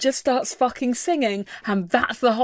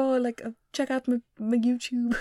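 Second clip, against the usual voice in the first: slight put-on Irish accent, quieter; 7 dB quieter than usual. Imitating a spouse in old YouTube music videos: little Irish accent. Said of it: "his little, little Irish accent".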